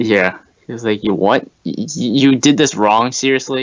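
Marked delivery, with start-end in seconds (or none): 1.0-3.6 very confused, baffled, stammering, stumbling disbelief. Retelling a commercial where a biker reads his tattoo: imitating a super confused voice. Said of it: "says it in some super confused voice".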